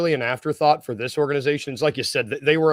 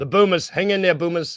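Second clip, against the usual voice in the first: attempted Australian accent; 3 semitones higher than usual. Cheering on the losing australian team, attempted australian accent. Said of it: "trying to get the accent".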